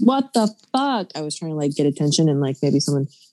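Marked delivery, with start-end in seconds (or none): 0.0-1.1 play-acted shrill top-of-the-lungs shriek, very high. Retelling seeing a car window smashed: retelling a scream at the top of lungs. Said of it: "I screamed at the top of my lungs".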